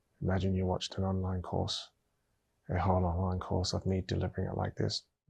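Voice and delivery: low-energy delivery. Demonstrating how a whole online course would sound with very low energy. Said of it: "I could give even lower levels of energy".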